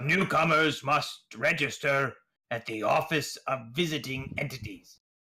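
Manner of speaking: severe, stern, no-nonsense official voice. Narrator reading an announcement to newcomers, in a stern voice. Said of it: "a stern voice says".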